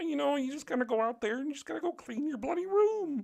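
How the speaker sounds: very high put-on frog puppet voice, Canadian accent. Joking that Jordan Peterson is Kermit with a Canadian accent, Jordan Peterson impression. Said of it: "Jordan Peterson is basically uh, Kermit with a Canadian accent".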